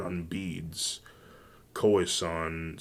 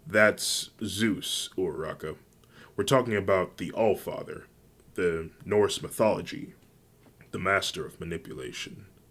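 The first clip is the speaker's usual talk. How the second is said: plain reading voice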